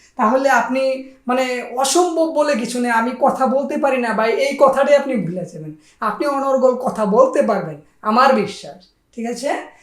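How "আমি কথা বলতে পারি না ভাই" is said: ordinary delivery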